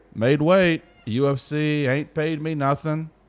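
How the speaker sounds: put-on friendly Southern voice. Retelling what a fighter said on a podcast, southern charm nice-guy voice. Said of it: "in his very southern charm, nice guy voice".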